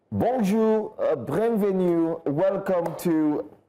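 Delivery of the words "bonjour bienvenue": French in a Russian accent, very slow. Greeting viewers at the start of the show: french with a russian accent. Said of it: "You're speaking French with a Russian accent".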